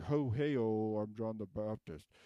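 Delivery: showy, drawn-out, slow showman announcer voice. Acting out a showy figure from the story: imitating a showy John the Baptist. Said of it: "He was a bit more like".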